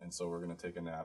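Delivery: soft, tired murmur. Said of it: "my voice is tired".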